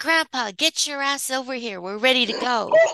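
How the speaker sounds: put-on high-pitched little-girl shouting yell. Retelling what a little girl yelled in Walmart: imitating a little girl yelling. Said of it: "the little girl yelled".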